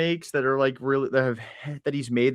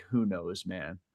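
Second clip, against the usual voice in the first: mock solemn, heavy, soft somber tone; 6 semitones lower, 8 dB quieter than usual. Retelling a man's reply after being asked how he was doing: imitating a somber tone. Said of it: "very somberly was like".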